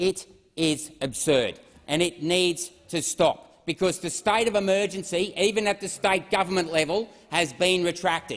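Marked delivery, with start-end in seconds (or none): 0.0-1.6 slow, weighty, emphatic insistence, word by word.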